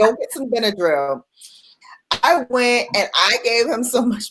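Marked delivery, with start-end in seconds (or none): 0.0-1.2 acted dry, matter-of-fact, dead straight deadpan delivery. Retelling what the grandmother said about the swollen baby: imitating a deadpan order.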